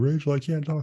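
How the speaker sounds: put-on high, helpless, babyish crying voice. Recounting coming to the house and telling Rachel, retelling acting like a baby. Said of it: "come to the house like a baby".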